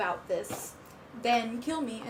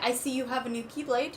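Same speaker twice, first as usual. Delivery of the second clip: normal talking voice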